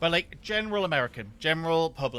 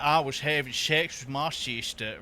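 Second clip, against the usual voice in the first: mocked Alabama-style Deep South accent; 2 semitones lower than usual. Describing the accent done mockingly for a meme, mocking Deep South accent. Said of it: "Deep South is like".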